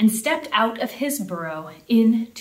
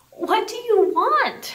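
shrill, very high, quavering, trembling cry; 12 semitones higher than usual. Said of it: "Cried Rabbit, trembling".

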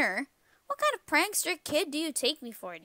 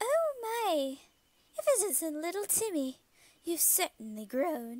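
put-on speaking with a British accent; 3 semitones higher than usual. Voicing the mother greeting her grown son, in a British accent. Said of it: "I'm making him a mom British".

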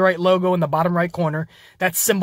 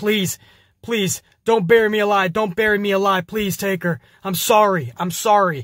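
mock pleading, begging cry. Retelling a wrestling match, imitating AJ Styles begging: imitating AJ Styles begging. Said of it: "A J Styles is begging, pleading to The Undertaker".

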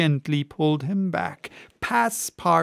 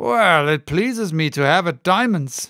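insolent, impudent tone, louder; 4 dB louder than usual. Reading a card-game scene, a colonel replies to his opponent in an insolent tone. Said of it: "replied Colonel Proctor in an insolent tone".

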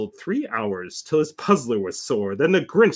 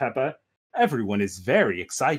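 plain

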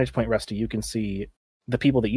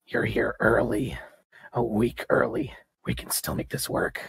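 harsh, rough, creaky rasped voice; 3 dB quieter than usual. Narrator voicing a masked woman addressing you, in a raspy rasping voice. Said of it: "She rasps out".

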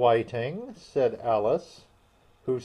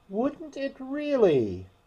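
very high-pitched, greatly surprised, astonished voice; 13 semitones higher than usual. Alice answers the Mock Turtle, in a tone of great surprise. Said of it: "Said Alice in a tone of great surprise".

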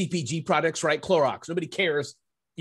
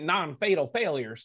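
put-on Southern US accent. Quoting a saying in its author's voice: Dave Ramsey Southern accent. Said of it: "in his Southern accent".

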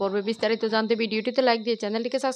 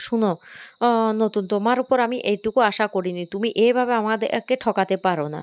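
ordinary delivery

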